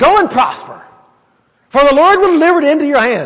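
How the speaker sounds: insincere, mocking, sarcastic tone, high and swooping. Retelling a man's answer to the king about going to war, retelling a sarcastic reply. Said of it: "he probably said this in a sarcastic voice".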